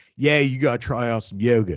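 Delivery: put-on New Jersey guy accent. Retelling a man meeting DDP at a yoga camp; DDP Jersey guy voice. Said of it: "He's a Jersey guy, so he's like".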